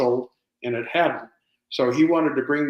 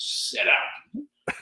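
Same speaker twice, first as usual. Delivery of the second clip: mock firm, stern tone, whispered; 11 semitones higher, 4 dB quieter than usual. Retelling ordering the dog on set to sit up: mock-stern command. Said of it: "in a stern voice said".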